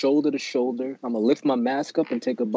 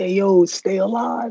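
very loud, drawn-out, high-pitched hollering yell; 8 semitones higher, 5 dB louder than usual. Telling how a friend always greets him when he goes out, retelling a loud yell. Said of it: "like as loud as possible".

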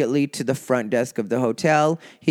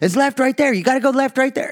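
very high, pressing, insistent shout, acted; 11 semitones higher, 3 dB louder than usual. Retelling a man yelling directions at the speaker while driving, imitating insistent yelling. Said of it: "he is yelling at me in a".

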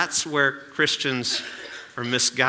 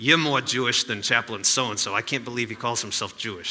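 poorly done put-on New York accent. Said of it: "So that's my bad New York accent".

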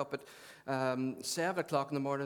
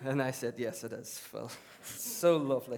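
usual speaking voice

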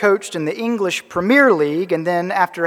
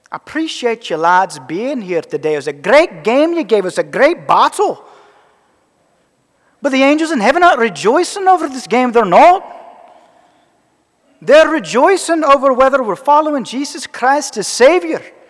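clumsy fake Scottish accent, pitched up; 6 semitones higher, 4 dB louder than usual. Quoting his coach's speech to both teams at midfield, bad Scottish accent. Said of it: "my really bad attempt at a Scottish accent".

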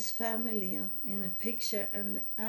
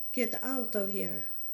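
put-on, held-back, mild yell; 5 dB louder than usual. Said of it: "he's screaming".

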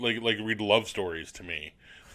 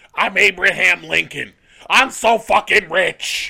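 shrill, slow, booming yell, high and dragged out; 9 semitones higher, 11 dB louder than usual. Quoting a movie scene: Gilbert Gottfried impression. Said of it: "That was a better Gilbert Gottfried".

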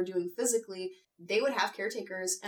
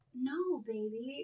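put-on sultry, suggestive, seductive delivery; 4 semitones higher, 5 dB quieter than usual.

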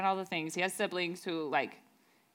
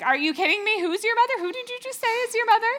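put-on frantic disbelief, very high and very loud; 9 dB louder than usual. After reading a passage, imagining Mary at the window: acting out Mary freaking out. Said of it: "just kind of freaking out".

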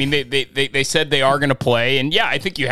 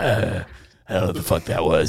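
rough, gravelly, lower-pitched impression voice; 7 semitones lower, 3 dB quieter than usual. Retelling what Bruce Arians said, in a gravelly Bruce Arians voice. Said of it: "Gravelly voice".

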